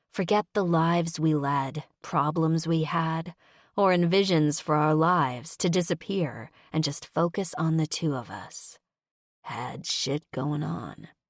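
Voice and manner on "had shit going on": low, rough, gravelly voice. Reading a story aloud, a man's line: gravelly voice. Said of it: "he said in his gravelly voice".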